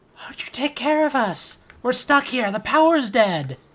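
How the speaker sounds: wailing ghostly voice, high and loud.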